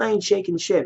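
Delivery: put-on high, soft, sulky, bratty kid voice. Retelling how he said it, mock-childish, like a kid. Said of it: "like a fucking kid would say it".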